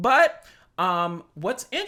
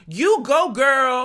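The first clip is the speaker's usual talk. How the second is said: loud, much higher-pitched exclamation. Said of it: "with an exclamation mark".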